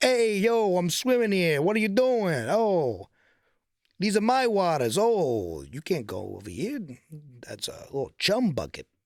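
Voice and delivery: shark character voice with put-on Italian accent. Describing an imagined Italian shark for listeners; Italian shark voice. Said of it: "Can you imagine a shark that's like".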